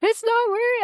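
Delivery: distraught, upset, very high and loud outburst. Speaker retelling answering someone who asked if they were okay, acting out being distraught. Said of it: "I was so distraught and upset about it".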